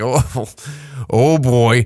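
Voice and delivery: put-on slow, laughing oh boy.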